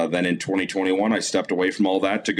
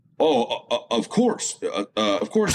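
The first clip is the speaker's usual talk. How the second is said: put-on stammer, much higher; 4 semitones higher than usual. Retelling a phone call, the speaker quotes the man's reply, retelling a man stammering. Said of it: "he kind of stammers".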